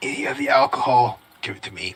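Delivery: hushed whispered aside. Voicing a character speaking aside to another character: whispering. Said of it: "He also whispers to Nail and just like".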